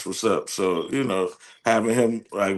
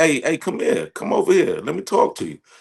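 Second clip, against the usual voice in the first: aggressive, insistent, pushy, high-pitched voice; 8 semitones higher than usual. Imitating New York women calling someone over: imitating an aggressive woman. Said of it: "I like New York women because they're aggressive".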